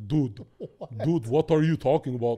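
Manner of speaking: put-on American accent with a foreign-sounding tinge. Showing how Logan Paul talks: Logan Paul accent impression. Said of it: "he's an American, but he has an accent".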